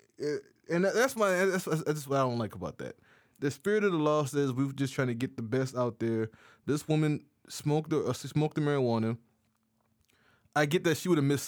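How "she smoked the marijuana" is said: ordinary talk, nothing marked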